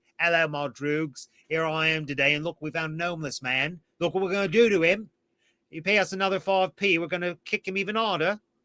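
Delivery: unhinged, deranged, hyped-up livestreamer voice. Imagining Alex as a live streaming YouTuber greeting viewers: Alex as an insane YouTuber. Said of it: "He'd be like".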